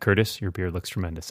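utterly flat, expressionless, low, quick deadpan. Retelling how someone phrased a comment, in a deadpan delivery. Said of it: "in this very deadpan".

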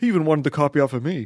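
cartoonish, over-the-top, high and loud exaggerated voice. Retelling a brother's story about a classmate in class: exaggerated imitation of brother. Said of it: "a good voice of your brother".

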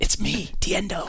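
breathy whispered delivery. Voicing a halfling who tells another character who he is: whispering in character. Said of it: "So I whisper".

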